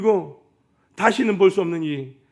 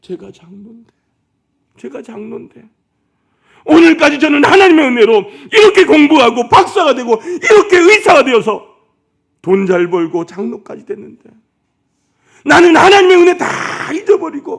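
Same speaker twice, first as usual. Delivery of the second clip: acted, very loud, high-pitched, weeping, sobbing wail; 9 semitones higher, 13 dB louder than usual. Speaker retells a doctor kneeling on the floor, praying aloud: retelling a sobbing wail. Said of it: "하고 통곡하면서 바닥에서 울더라는".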